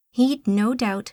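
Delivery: ordinary delivery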